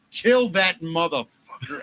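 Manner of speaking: put-on rowdy, lightly done heckling cry, screaming old woman voice. Retelling how a grandmother at a wrestling match screamed: imitating a screaming grandmother. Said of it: "The top of her lungs, she stands up and screams".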